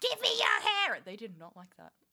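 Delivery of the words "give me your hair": shrill, very high, loud shriek. Recalling screaming at long-haired passersby: retelling a scream. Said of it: "I would scream at them".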